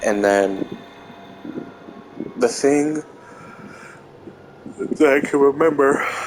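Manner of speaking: words pulled through a yawn. Telling a story just after waking up, yawning while talking. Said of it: "Sorry, I'm yawning".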